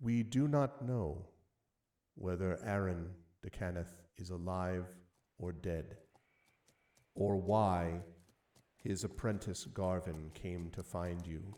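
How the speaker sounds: very quiet, hushed oracle voice. The narrator reads out a message meant mainly for one player, very quietly. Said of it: "And it says very quietly".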